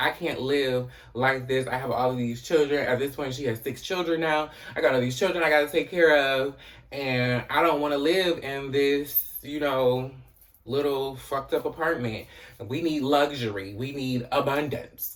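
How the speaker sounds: ordinary delivery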